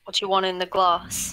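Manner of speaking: put-on British accent. Answering a request for their best English: put-on British accent. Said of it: "Do you want more British than that?".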